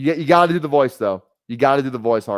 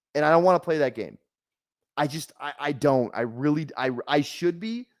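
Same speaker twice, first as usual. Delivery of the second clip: usual speaking voice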